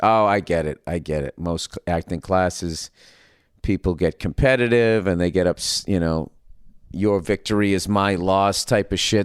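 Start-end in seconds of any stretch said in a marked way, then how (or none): none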